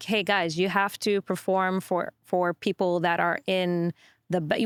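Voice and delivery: plain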